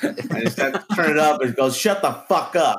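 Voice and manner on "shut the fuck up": mild, angry yelling voice. Retelling a scene where a father turns the volume up and yells at his daughter: retelling a yell. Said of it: "Yelling at your daughter like that".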